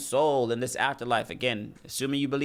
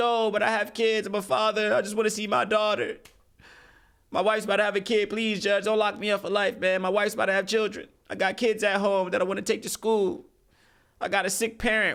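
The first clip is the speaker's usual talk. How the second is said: put-on, weepy, tearful, begging plea; 8 semitones higher than usual. Mocking criminals who cry and beg the judge for mercy: mock tearful pleading. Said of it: "Why are you pleading to the judge?".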